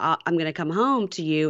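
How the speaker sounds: ordinary talk, nothing marked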